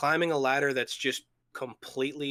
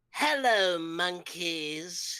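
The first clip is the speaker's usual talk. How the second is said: upper-class villain voice; 3 semitones higher than usual. Explaining they use their whole jaw, the speaker does it: high-pitched posh Frieza voice. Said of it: "high pitch on a posh accent".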